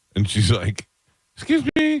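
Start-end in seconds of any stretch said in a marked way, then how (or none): 1.3-2.0 very high put-on woman's voice. Retelling a video of a man who throws his voice: imitating a man faking a female voice. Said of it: "and he does females".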